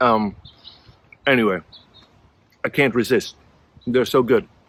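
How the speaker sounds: speaking while chewing, mouth full. Eating something and saying how good it is, mouth full. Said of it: "normally you don't speak with your mouth full".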